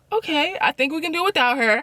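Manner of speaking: dry sarcastic brush-off. Retelling Marlo's reply on the phone: imitating a sarcastic reply. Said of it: "very sarcastic".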